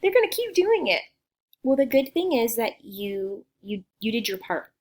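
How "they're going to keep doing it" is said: put-on high, loud whiny kid voice. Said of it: "hear a couple voices saying".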